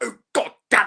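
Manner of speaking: put-on high, loud, full posh English accent. Telling a fellow fan how he talks when he gets out, imitate Malcolm going full English, posh. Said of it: "Malcolm does go full English in this".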